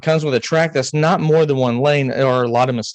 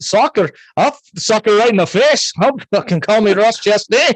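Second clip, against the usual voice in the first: bad fake Scottish accent, much higher and faster; 8 semitones higher, 3 dB louder than usual. Joking with a co-host about the word soccer, in a terrible Scottish accent. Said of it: "That is a terrible, terrible accent".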